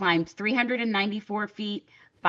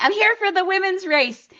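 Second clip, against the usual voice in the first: very high, shrill, loud rallying cheer scream; 12 semitones higher, 8 dB louder than usual. Retelling a race, re-enacting screaming: imitating own screaming. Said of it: "I kept screaming".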